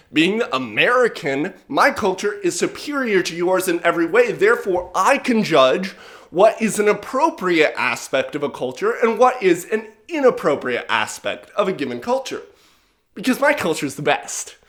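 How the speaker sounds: plain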